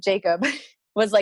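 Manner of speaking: normal talking voice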